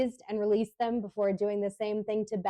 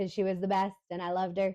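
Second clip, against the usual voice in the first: ordinary talk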